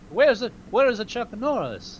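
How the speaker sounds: put-on Italian accent. Riffing on chuck norris, the speaker asks where he is in a put-on italian accent. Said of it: "Is is that a good Italian accent".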